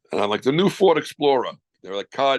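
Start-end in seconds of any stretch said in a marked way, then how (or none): 0.4-1.5 put-on high, raised New York accent. Retelling a line from a first audition as a ford explorer, in a new york accent. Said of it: "that New York accent".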